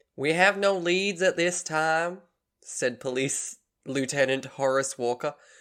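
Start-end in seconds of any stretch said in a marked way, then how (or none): 0.2-2.2 fake Southern voice, higher. Reading a police lieutenant's quote from a news article: put-on southern accent. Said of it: "try and figure out how to do a southern voice".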